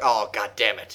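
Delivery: low, gruff voice, flamboyance dropped. Imitating a character dropping his flamboyant act: gruff Fire Emblem voice. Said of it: "actually sounds really gruff".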